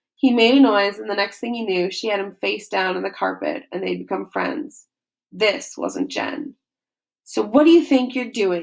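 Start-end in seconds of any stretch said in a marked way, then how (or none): 7.3-8.6 sharp hiss. A voice hisses a question into his ear: hissing. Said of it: "a voice hissed in his ear".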